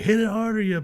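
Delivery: play-acted very high, shrill shouting. Retelling yelling at the others on the putting green: imitating own past yelling. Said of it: "I'm yelling at y'all".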